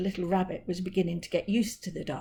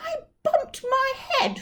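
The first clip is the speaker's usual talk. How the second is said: very high, grumpy, small voice; 3 dB louder than usual. Narrator reads a little rabbit down a well answering Percy again, cross little voice. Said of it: "answered the cross voice again".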